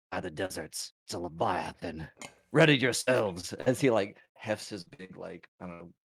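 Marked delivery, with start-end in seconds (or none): 0.1-3.5 grumpy muttering under breath, louder. Voicing a character who spots a Leviathan: grumbling under his breath. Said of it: "grumble under his breath".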